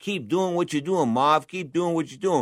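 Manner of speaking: put-on speaking in a Massachusetts accent. Quoting what Mav's team kept telling him mid-fight, in a Massachusetts accent. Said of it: "in that Massachusetts accent".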